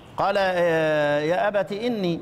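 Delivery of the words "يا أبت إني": ordinary delivery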